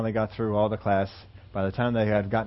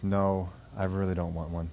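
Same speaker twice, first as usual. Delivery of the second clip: sorrowful, downcast, very sad tone; 2 semitones lower than usual. Retelling how a girl turned down an offer, imitating a sad tone. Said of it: "with a very sad tone in her voice".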